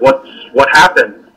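ordinary talk

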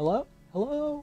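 very faint, hushed, far-off, very high calling. Game master voices someone trapped behind thick stone, very faint voice. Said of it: "And a very faint voice saying".

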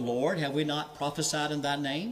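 ordinary delivery

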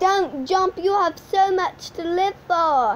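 put-on British-accented delivery. Replying to someone talking about jumping off a building, in a british accent. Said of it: "I love doing this kind of British accent".

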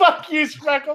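laughing, very high-pitched.

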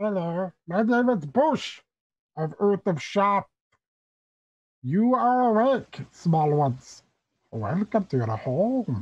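warped, garbled, high, loud blob-creature voice. A game master voices a gelatinous being addressing the players, garbled Bush of Earth of Shop voice. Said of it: "you hear a very, very garbled voice say".

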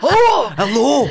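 put-on Glasgow accent. Imagining a stranger down there, greeting in a Glaswegian accent. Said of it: "Is it Glaswegian accent doing that?".

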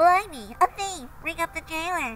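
cross, loud, high-pitched outcry. Pocket owner catching a thief's hand in his pocket, calling for the jailer: shouting. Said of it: "shouted the owner of the pocket".

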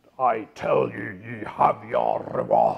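deep, booming Scottish preacher accent. Explaining how a Bible passage sounds in Britain, the speaker uses a deep Calvinist Scots accent. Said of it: "with a sort of a deep Calvinist Scots accent".

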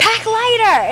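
mock, very high, scolding Brooklyn Italian shout. Imitating the speaker's mom screaming at them during move-in, mock-screaming, Italian Brooklyn accent. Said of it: "in her Italian Brooklyn accent".

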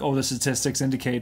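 normal talking voice

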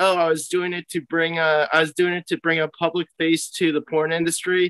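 usual speaking voice

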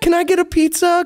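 very high head voice, lifted up an octave. Acting out ordering a pizza: high head voice. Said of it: "I go up like an octave".

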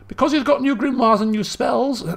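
voice cracking. Explaining a game character's progress to viewers, with a cracking voice. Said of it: "my voice is breaking".

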